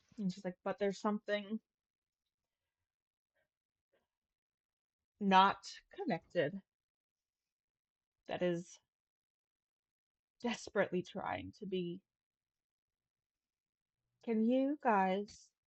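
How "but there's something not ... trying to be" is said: awestruck, quieter. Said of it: "awe in her voice as she says it".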